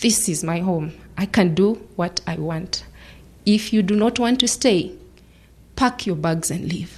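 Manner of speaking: ordinary delivery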